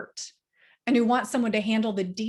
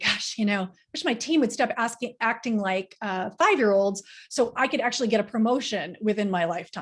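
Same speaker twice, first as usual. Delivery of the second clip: normal talking voice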